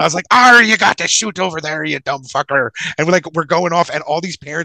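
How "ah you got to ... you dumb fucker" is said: loud, salty sea dog pirate voice. Retelling shooting cannons with other guys, the speaker quotes himself talking like a pirate. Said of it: "So then I start talking like a pirate".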